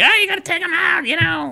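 play-acted, very high, hysterical yelling. Mocking how race commentators talk about wrecks: imitating Clint Bowyer screaming and yelling. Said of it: "Clint Boyer screaming and yelling like".

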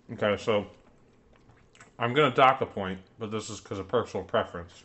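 talking while chewing with mouth full. Docking a point from the chicken, talking while chewing. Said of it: "I should finish chewing".

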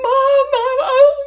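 very high, very loud, shrill screaming cry, drawn-out oh. Speaker recalls running down the hall for the nurses, retelling screaming for mom. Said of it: "I was screaming for the nurses".

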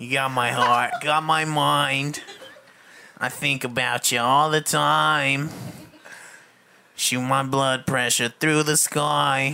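put-on mock Boston accent. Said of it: "Do it in a Boston accent".

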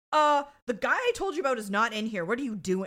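loud, high-pitched, play-acted razzing scolding yell. Retelling a scene where a character razzes the others: imitating a character razzing people. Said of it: "razzes them".

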